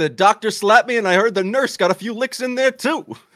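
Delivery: very high, loud comic punchline delivery. Quoting a comedian's routine after talking about his clips: Rodney Dangerfield voice. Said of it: "a lot of Rodney Dangerfield".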